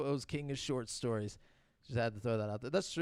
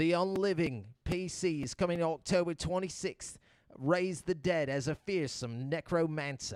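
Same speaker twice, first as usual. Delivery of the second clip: put-on Australian accent throughout. Reading out a game announcement, in an Australian accent as a Peaky Blinder. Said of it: "I'm gonna go with an Australian accent".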